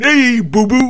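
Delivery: poorly done cartoon voice, very high and loud. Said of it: "a terrible impersonation of Yogi Bear".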